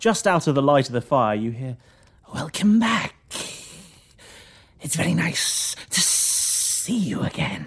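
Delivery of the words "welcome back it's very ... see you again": slow, mysterious, shadowy stranger voice. Voicing a figure greeting the party from a shadowy corner: shadowy hooded figure voice. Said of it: "you hear from a shadowy corner of the room".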